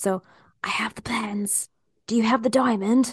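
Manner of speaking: hushed whisper. Whispering lines meant for strangers into the microphone: whispering. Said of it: "I'm going to whisper these to you".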